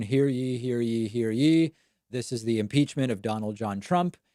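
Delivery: very flat, droning, unvaried monotone delivery. Speaker imitates the Sergeant at Arms opening the impeachment trial, very monotone. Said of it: "says in a very monotone".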